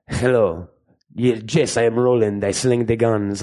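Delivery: put-on Latin accent, each word deliberate and dragged out. Mocking how the actor would sound in the role: imitating the actor's Latin accent. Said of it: "but it's gonna be like".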